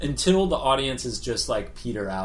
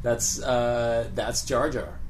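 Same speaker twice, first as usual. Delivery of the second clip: ordinary talk, nothing marked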